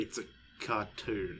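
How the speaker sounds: soft, slow, flat deadpan delivery. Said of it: "she literally just deadpan looked at me".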